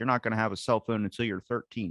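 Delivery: plain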